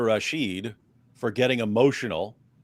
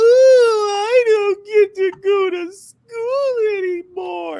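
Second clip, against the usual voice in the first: very high, very loud, slow fake crying wail; 10 dB louder than usual. Retelling how a man mocked crying schoolgirls: imitating mocking whine. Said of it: "he's just mocking them".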